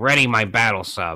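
dorky, nerdy put-on character voice. Retelling how a man on the phone gave an order, nerdy voice. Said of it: "this nerdy voice".

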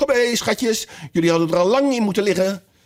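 quavering, trembling, very high-pitched voice. A canary calls to her children, in a trembling voice. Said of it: "riep met trillende stem".

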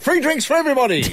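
cheery, mock generous tone.

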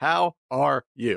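flat, mechanical, level robotic monotone. Copying a co-host's answer as a joke: mock robotic delivery. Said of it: "Let's do the whole show that way, speaking that way".

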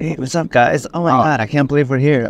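jittery, wired delivery. Describing what a meth high feels like: imitating a jittery high. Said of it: "It's, like, jittery".

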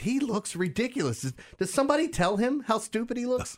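mock laughing through words. Retelling what she kept saying during a baseball game, imitating her giggling. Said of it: "She started giggling at his arm".

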